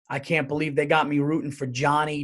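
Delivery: plain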